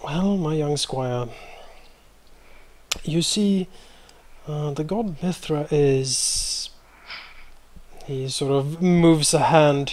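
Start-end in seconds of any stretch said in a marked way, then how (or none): 0.0-6.7 fatherly, paternal tone. Voicing Zachariah as he smiles and addresses his young squire, fatherly tone. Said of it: "a fatherly sort of tone in his voice".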